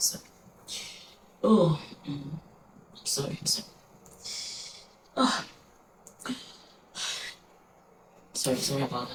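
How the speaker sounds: tearful, breathy near-whisper, choking back tears. Recalling their mother's burial day, the speaker apologizes, fighting back tears. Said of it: "I don't want to cry, please".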